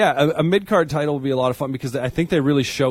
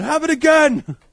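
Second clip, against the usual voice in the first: mock frustrated outburst, belted high and loud. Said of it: "Except in his Irish accent".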